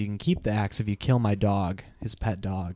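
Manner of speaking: ordinary talk, nothing marked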